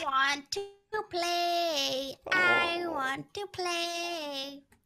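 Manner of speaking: creepy, eerie voice. Playing the killer in a game, calling to the others: creepy voice. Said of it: "Why do you always get so creepy when you're the killer".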